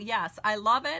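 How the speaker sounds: usual speaking voice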